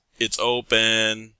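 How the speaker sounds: big booming shout, open and drawn out. Narrator voicing someone answering the knock from inside, in a booming voice. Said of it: "you hear a booming voice".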